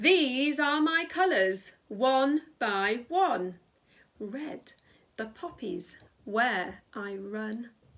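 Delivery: very slow, loudness changing word by word. Showing listeners how to perform a poem, varying volume on words. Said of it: "by using my voice in a different volume".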